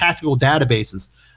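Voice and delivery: ordinary talk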